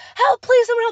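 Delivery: mock desperate, shrill, very high screaming. Recounting getting a wrist stuck in a closing gate, retelling a scream for help. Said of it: "Like I was screaming".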